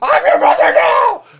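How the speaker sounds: woman's crazed, unhinged, full-crazy scream. Recapping the ending, speaker quotes Bridget to Sully in the truck: retelling Bridget screaming. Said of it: "She's like screaming that at her".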